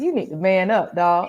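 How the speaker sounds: ordinary talk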